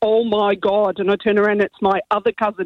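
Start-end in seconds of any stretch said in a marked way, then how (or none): 0.0-1.0 put-on thick, broad Northern Irish Derry accent. Retelling what a cousin from Northern Ireland said, in a thick Derry accent. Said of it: "in a really thick Derry accent".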